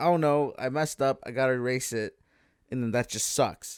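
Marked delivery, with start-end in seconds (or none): none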